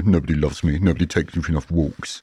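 sulky delivery with voice dropped deep. Voicing their grumpy dog the way they started doing: Kevin the Teenager voice. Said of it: "we started doing like Kevin the Teenager".

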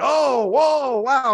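mock, high, loud "whoa" scream.

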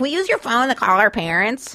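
put-on childlike little kid voice. Retelling asking a stranger to call parents: imitating own younger self. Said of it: "I don't know why that's my voice".

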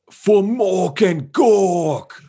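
very high shouted battle cry, one word stretched. Answering the game master's call for a trademark battle cry: shouted battle cry. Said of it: "I shout".

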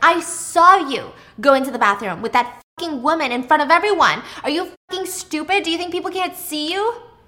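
yelling. Acting out Margot yelling at Brent about the bathroom: imitating a woman yelling. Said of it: "Margot's yelling at Brent".

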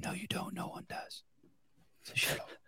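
breathy, hushed whisper with retorting tone. Retelling whispering back at the TV commercial: imitating own whispered reply. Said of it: "I would always whisper back to the T V".

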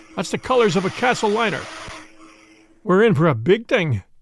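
plain reading voice

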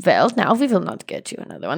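put-on German accent in English. Retelling what the Russians said, done in a German accent. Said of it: "that was a German accent".

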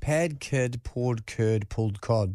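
slow, low voice, each word carefully spaced out. Asked to say the word list once more for everyone, slowly. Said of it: "Do you want to do it once slowly".

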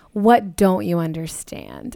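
low, condescending, unimpressed, patronizing tone. Describing Demi's intense lines, the speaker quotes one, imitating Demi's deadpan. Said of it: "like deadpan, like so patronizing".

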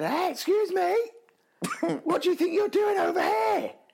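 mock yell as if across distance, very high. Retelling shouting across to a young child running onto the playground. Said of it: "I shouted to him".

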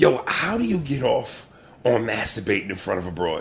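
ordinary talk, nothing marked

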